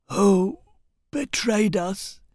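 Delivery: weak, feeble, high failing croak. A dying rebel leader asks Barandas, who leans close to him, in a weak croak. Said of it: "he croaked weakly".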